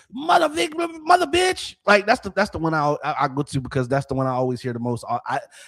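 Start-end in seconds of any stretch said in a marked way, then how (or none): 0.2-1.8 very high, slow, angry broken English. Describing how new English learners cuss when angered, imitating angry broken-English cussing.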